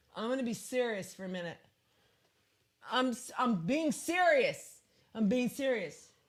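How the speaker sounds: put-on drunk voice. Retelling how drunk people get serious: imitating a drunk person. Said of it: "It's that drunk thing where they're like".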